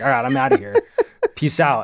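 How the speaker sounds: fed-up, angry delivery with a swooping pitch. Explaining rushing out of the house after a kid refused eye drops; retelling an angry outburst. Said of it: "and so I just got super mad".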